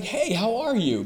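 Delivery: high, bright, cheerful, cheery tone.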